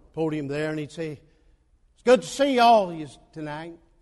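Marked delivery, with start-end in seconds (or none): 1.2-3.8 booming, slow, drawn-out Texan drawl. Recalling Brother Roloff greeting everyone from the podium, Brother Roloff's Texan accent. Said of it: "talking like that Texan would".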